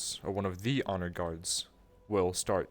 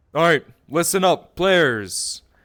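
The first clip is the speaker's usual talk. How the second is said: booming, very loud, high-pitched announcer voice; 9 semitones higher, 12 dB louder than usual. Setting the scene, calling out to the players in a loud voice. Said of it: "it is pretty loud".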